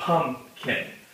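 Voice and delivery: pumpkin, with the first syllable pump stressed. Showing where emphasis goes in pumpkin, stressing the first syllable of pumpkin. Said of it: "a lot of our emphasis goes on the first part".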